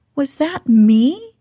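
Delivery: strange, odd voice, hardly daring to believe. Reading a story aloud, a character asks in an odd voice, hardly daring to believe. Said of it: "in an odd voice, hardly daring to believe it".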